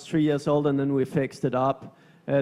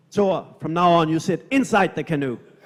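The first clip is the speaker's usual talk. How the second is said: mock firm, serious, stern delivery; 2 semitones higher than usual. Retelling what a sailor said after coming aboard the canoe: imitating Sanakoli's stern warning. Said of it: "he's looking at me very stern".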